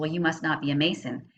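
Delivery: ordinary delivery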